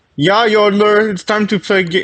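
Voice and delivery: high-pitched fake Finnish accent. Speaker tries out an accent on the spot: put-on finnish accent. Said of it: "I want to do a Finnish accent now".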